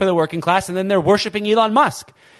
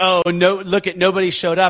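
ordinary talk, nothing marked

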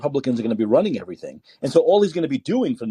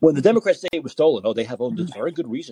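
usual speaking voice

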